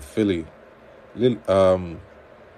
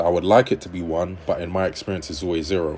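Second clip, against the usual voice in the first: usual speaking voice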